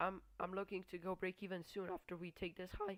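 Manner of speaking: voice breaking, cracking mid-word on "I'm". Talking through a market close, speaker's voice cracks mid-sentence. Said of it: "I had a voice crack".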